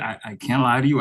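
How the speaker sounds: plain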